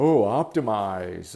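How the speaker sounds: mocking, sarcastic delivery of the word "optimize". Retelling how others said the word on his T-shirt, mimicking a mocking 'optimize'. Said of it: "like just making fun of it".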